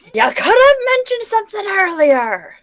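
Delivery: very high, shrill yell in a put-on voice. A player in a group game, in character, shouting at the wizard. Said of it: "I just like shout at the wizard".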